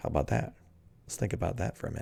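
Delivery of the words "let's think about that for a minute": soft, fast whispered quiet voice. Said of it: "my quiet voice".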